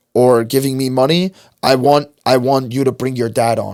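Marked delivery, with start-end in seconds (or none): none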